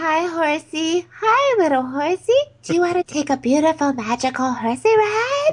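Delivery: put-on baby-talk voice. Retelling what she said to the horse, in baby talk. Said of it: "baby talk".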